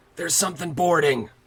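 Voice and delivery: loud, high-pitched yelling. Throwing a firebolt at a figure climbing the boat, in character: yelling out a warning. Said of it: "as I'm yelling out".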